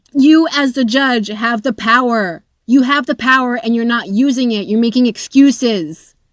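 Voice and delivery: shouting the words, straight-out yelling. Reacting angrily to a court ruling being read aloud: yelling. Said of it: "I am sorry if I'm yelling into your ears".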